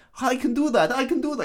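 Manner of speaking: very high, cartoonish kids'-show voice. Retelling a scene, imitating Chekhov as he volunteers: Chekhov impression. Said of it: "he speaks like Sasha from".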